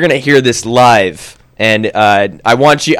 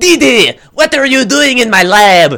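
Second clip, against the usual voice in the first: put-on high, vampire-like French accent; 11 semitones higher than usual. Recalling a character from old episodes, the speaker does a Dracula-and-French-guy accent voice. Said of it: "like Dracula and a, and a French guy".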